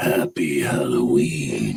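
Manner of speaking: rough, gravelly. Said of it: "because of my gravelly voice".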